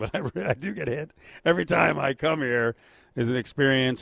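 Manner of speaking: speaking while laughing through the words.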